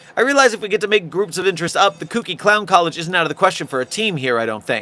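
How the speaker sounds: plain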